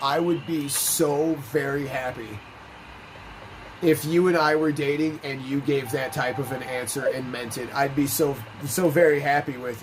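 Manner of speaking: normal talking voice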